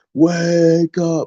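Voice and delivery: deep put-on voice. Urging people to wake up: deepest Spike Lee voice. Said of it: "in my deepest Spike Lee voice".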